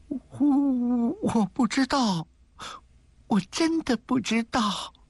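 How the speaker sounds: quavering, trembling voice. Reading Xie Xiaoyu's reply when pressed by Madam Tieyan, in a trembling voice. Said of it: "她颤声着说".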